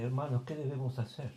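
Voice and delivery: normal talking voice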